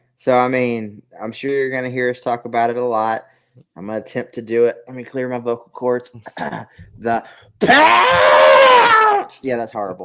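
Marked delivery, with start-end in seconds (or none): 6.1-9.4 deafening, swooping, very loud, high-pitched shout. Speaker attempting to do Monty Brown, yelling 'The Pounce'. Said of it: "I'm sorry if I just deafened you".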